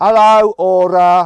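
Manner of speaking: strong Midlands accent, very loud and high. Testing whether the car's voice system understands accents, in a really strong Midlands accent. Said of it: "I'm going to do a really strong Midlands accent".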